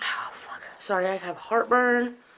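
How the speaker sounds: soft, pained whisper.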